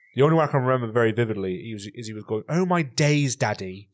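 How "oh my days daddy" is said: put-on posh accent, much slower. Quoting a kid who mixed slang with posh words, in a posh accent. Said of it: "with the posh accent".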